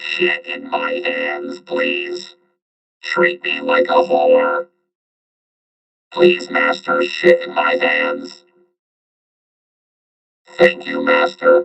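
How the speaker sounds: very low, rough, creaky mechanical robot voice. In a bit about future robot servants, the speaker talks as the robot in a robot servant voice. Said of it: "Where's the robot voice?".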